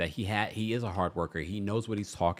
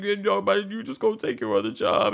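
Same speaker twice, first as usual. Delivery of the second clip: mock very high, loud, bratty whining tone; 11 semitones higher, 5 dB louder than usual. Retelling her emotional reply to him: imitating a bratty, emotional tone. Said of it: "Candy starts giving that bratty energy".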